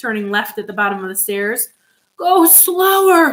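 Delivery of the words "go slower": high, breathless, panting, out-of-breath gasping. Missus Salt, hurrying down the stairs after Mister Wonka, panting, out of breath. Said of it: "Panted Missus Salt".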